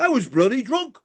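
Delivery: very high-pitched, comic put-on voice. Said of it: "his voice".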